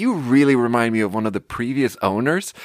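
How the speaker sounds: ordinary delivery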